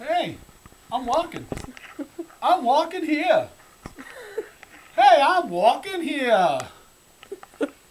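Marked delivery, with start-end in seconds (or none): 0.0-6.6 put-on high, loud, slow New York accent. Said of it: "That's my New York accent".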